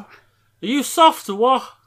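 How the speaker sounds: Liverpool Scouse accent. Teaching a Scouse phrase before a learner's turn, Scouse accent. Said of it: "Now can you add the T to the end".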